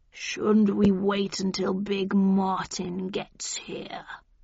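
deep, low, rumbling voice. Narrator voices the big cat speaking to the narrator: deep, rumbling voice. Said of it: "said in a deep, rumbling voice".

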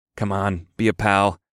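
ordinary delivery

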